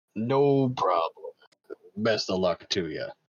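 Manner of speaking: very gruff, low, unhurried orc voice. As an orc replying to an adventurer's thanks, gruff orc voice. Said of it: "very gruff, it's a very gruff voiced orc".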